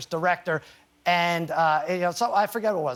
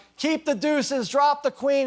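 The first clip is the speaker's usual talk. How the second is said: pitched-up, high, excited screaming and shouting; 8 semitones higher than usual. Speaker recalls what they shouted during a card game with her, retelling a scream. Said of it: "we ended up just like screaming".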